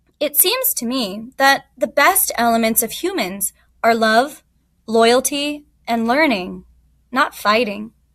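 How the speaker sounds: ordinary delivery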